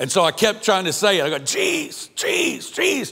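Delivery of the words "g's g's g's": very high, strangled, choked-off sputtering. Recounting struggling to get a word out: retelling choking on a word. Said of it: "I start choking".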